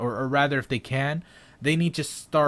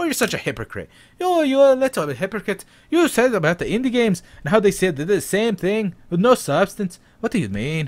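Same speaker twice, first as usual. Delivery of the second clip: bad, fake Irish accent, very high and loud; 9 semitones higher, 7 dB louder than usual. Imitating a viewer who calls the speaker a hypocrite: bad irish accent. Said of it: "Mister Bad Irish Accent".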